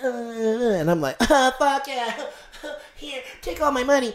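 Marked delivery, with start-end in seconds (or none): 1.2-4.1 put-on young teen boy voice, high. Retelling own past words to a stripper: put-on thirteen-year-old voice. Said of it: "he uses his thirteen-year-old voice".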